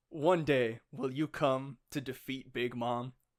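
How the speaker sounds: usual speaking voice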